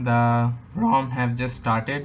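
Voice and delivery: breaking voice, cracking mid-sentence. Talking viewers through a phone rom update, voice cracking. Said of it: "that's a voice crack right there".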